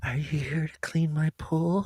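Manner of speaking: deliberately poor, put-on seductive voice. Acting out a movie scene with others, in an attempted sexy voice. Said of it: "Your attempt at a sexy voice".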